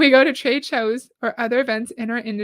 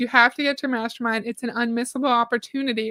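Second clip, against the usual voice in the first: ordinary talk, nothing marked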